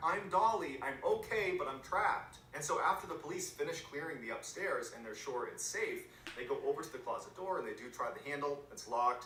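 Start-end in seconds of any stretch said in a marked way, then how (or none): 0.0-2.4 loud, high-pitched yelling. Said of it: "she yells back".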